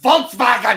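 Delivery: mock angry German shout, loud and high. Mocking how German speakers sound, as if yelling at each other: imitating Germans yelling angrily. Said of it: "like they're yelling at each other".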